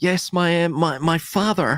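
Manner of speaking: high, stuck-up, snobby put-on posh accent. Retelling what a man said about his father, in a put-on stuck-up accent. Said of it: "I'm trying to put this on".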